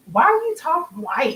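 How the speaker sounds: mock scornful, disgusted, high and loud. Retelling a question a girl on another street asked: imitating disgust and disdain. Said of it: "with such disgust and disdain, she was like".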